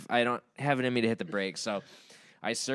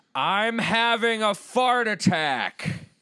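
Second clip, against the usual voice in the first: proud, loud, very high, slow, drawn-out yell; 10 semitones higher, 5 dB louder than usual. Recalling sauntering in through the door, retelling a yell. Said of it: "and I yelled".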